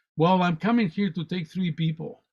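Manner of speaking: ordinary delivery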